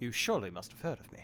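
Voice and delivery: very proper, slightly soft British gentleman voice. Playing the very proper gentleman in the bit, in a Sherlock Holmes voice. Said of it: "get your best British gentleman voice ready".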